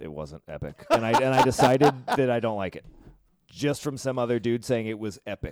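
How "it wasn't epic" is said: under-breath mutter, much quieter, lower. Recounting a reply after someone called it epic, retelling an under-breath mutter. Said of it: "I just said under my breath".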